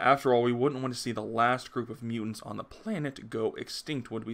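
normal talking voice

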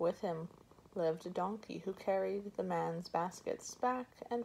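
plain reading voice

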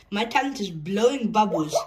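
ordinary delivery, nothing marked

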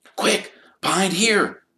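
hissing, very high-pitched. Harry pulls Ron behind a bush as Lockhart comes out; hissed. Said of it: "Harry hissed".

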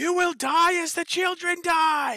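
shrill, very loud, high scream in unison. Voicing a swarm of creatures in one unified voice: unified chorus screaming. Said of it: "scream this voice back at you saying".

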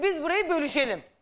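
ordinary talk, nothing marked

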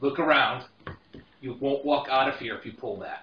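hushed, close half-whisper. Voicing a gentleman warning a player at the table: half-whisper. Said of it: "whispers in your ear".

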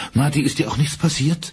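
quavering, trembling, high-pitched voice. Narrator reading Kate's line to Marty, in a trembling voice. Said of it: "Kates Stimme zittert".

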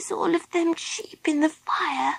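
hushed, quiet, frightened voice. Baby Bee, sitting in a log beside Philip after the fire: quiet, scared voice. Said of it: "in a quiet, scared voice".

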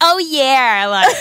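exaggerated, full-blown put-on American accent. The speaker shows the only accent they can do: a full-blown American accent. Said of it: "I can only do that full-blown American accent".

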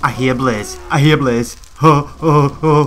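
loud, slow, frightened, drawn-out cry. Gamer exploring, telling the viewers they hear blaze, in a scared voice. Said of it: "That was my scared voice".

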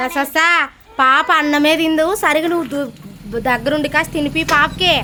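loud, high-pitched calling out.

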